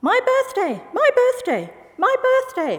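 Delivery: very high, shrill, swooping squawky bird voice. The narrator makes a bird finger puppet speak, squawking puppet voice. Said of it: "and squawked".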